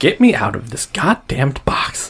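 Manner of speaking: hushed half-whisper, under the breath. Voicing a character peeking out of a box: half-whispering. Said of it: "looking and whispering out at you".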